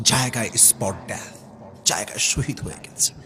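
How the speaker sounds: low, soft, hushed, grave whisper.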